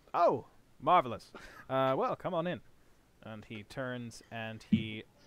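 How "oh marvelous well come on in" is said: put-on Mid-Atlantic accent. Voicing an inventor character inviting visitors inside; 1920s Mid-Atlantic inventor voice. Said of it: "I had like a cool inventor voice for this guy. ... he's meant to sound like he's kind of like from the 20s. ... Mid-Atlantic".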